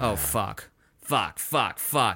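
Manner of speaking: low, slow mumble under the breath. Reading a story aloud, a character finding he has no keys: mumbling to himself. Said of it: "he mumbles to himself".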